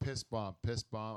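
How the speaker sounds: ordinary talk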